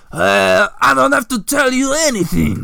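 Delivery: sneered, sneering tone. A narrator reads a character's line in an adventure, sneering. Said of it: "he sneers".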